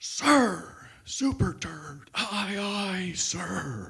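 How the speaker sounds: very slow, drawn-out, one-voice military group yell. Describing a platoon snapping to attention, the speaker voices their reply: retelling a platoon's unison yell. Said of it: "they all yell in one big voice".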